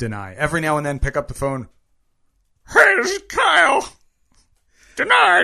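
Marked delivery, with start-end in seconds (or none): 2.7-5.5 very loud, very high, rough rasping voice. Acting out answering the phone while denying mortgages: Kyle impression. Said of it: "my Kyle impression".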